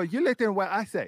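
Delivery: put-on little kid voice, young and childlike. Quoting what the speaker's son said, in a put-on childlike kid voice. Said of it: "Like in that kid voice".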